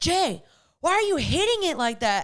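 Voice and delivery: mock shrill, angry, very high, exasperated scolding. Retelling how the partner coaches pickleball: imitating someone getting mad. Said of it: "he gets mad at me".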